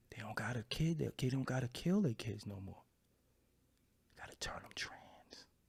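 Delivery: hushed whisper under the breath. Saying they don't want to speak about it too much, the speaker goes on whispering. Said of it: "I'm whispering".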